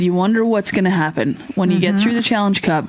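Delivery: normal talking voice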